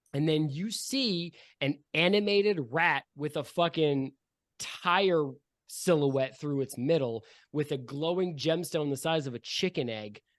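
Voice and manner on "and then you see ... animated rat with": ordinary delivery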